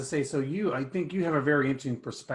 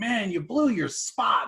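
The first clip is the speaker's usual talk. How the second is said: very high-pitched, loud yell; 9 semitones higher, 5 dB louder than usual. Telling the listener how they yell at the TV during football, imitating someone yelling. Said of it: "you're yelling at the T V like".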